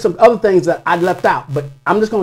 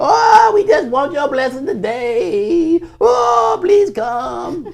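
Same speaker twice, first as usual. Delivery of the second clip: high, mock whiny, whimpering, crying voice; 9 semitones higher than usual. Mocking people who pray and beg every Sunday: imitating whiny begging. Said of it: "they begging and begging and begging".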